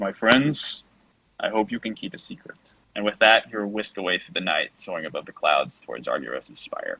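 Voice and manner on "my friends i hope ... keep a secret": gentle, kind, familiar, ancient dragon voice. A giant creature's enormous head turns to address the listeners, booming draconic voice. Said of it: "it says in a booming, draconic voice, but with a familiar, gentle tone".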